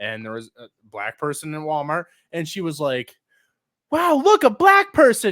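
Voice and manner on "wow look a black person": put-on very high, loud, shouted child's yell. Retelling a daughter's outburst in a store: imitating a child yelling. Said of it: "She, like, yelled it".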